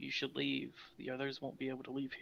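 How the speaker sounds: steady, unbroken, very quiet whisper, barely there. Voicing the thing that talks in your head, telling you to leave: constant whisper. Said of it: "In a constant whisper".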